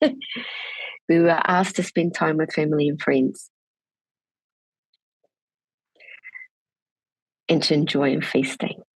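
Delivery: trying not to cry, holding back emotion. Speaking to a webinar audience, trying not to cry: holding back emotion. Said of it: "I'm going to try not to get emotional".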